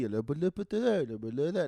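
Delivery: flowy French accent. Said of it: "the flowy".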